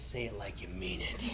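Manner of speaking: low, soft, teasing whisper.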